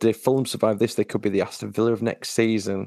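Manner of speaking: ordinary talk, nothing marked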